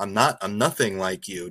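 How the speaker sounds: usual speaking voice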